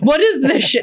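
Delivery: mock exasperated outburst. Retelling a client's reaction on camera, imitating someone freaking out. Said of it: "he's, like, freaking out".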